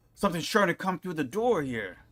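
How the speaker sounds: calling out. Voicing an old farmer who warns about the door: shouting old farmer. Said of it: "he shouts".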